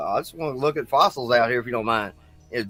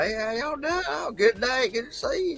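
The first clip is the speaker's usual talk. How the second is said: very high, folksy put-on country drawl; 12 semitones higher, 5 dB quieter than usual. Imitating how people up here talk: imitating a country accent. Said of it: "they kinda just talk kinda country like that".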